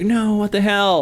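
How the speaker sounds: high mock scream.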